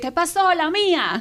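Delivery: high-pitched, loud, streetwise slangy delivery.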